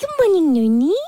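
high-pitched voice used for talking to pets. Showing how the speaker greets the dog each morning, talking-to-a-pet voice. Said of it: "That's how I talk to him".

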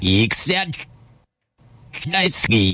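wet-sounding, saliva-filled mouth. Saying a word backwards, then forwards, in a game: watery mouth. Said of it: "I got a watery mouth".

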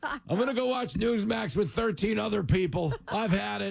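mock outrage, high-pitched.

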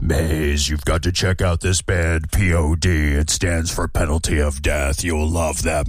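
put-on creepy deep voice. Quoting a coworker recommending a band, in a creepy deep Lurch voice. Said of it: "say it in that creepy, deep lurch voice".

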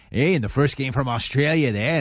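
terrible fake Australian accent. Reading out sports scores, slipping into a terrible australian accent. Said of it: "That was a terrible accent".

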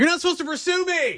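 mock yell, high-pitched.

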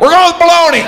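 very high, loud, triumphant shout.

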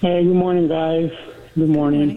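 heavy-hearted, sad, downcast delivery. Answering the group's hello, sad. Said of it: "You sound sad".

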